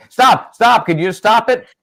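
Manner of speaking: very loud, high-pitched, shrill, fed-up, exasperated yell. Showing the other speaker what Linda does, acting out Linda's yelling. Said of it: "Yell at me".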